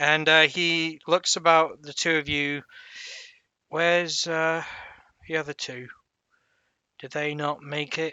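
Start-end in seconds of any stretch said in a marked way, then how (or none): 3.7-8.1 put-on dirty old geezer voice, light cockney accent. Game master voicing a dirty old geezer talking to the players, a bit cockney. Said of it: "Dirty old geezer with a bit of a cockney".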